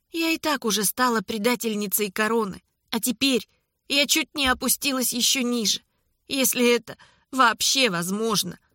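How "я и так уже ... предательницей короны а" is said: ordinary delivery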